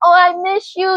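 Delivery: high, fake crocodile-tear sobbing voice. Imitating someone acting like they miss a person: mock crying. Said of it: "crying crocodile tears".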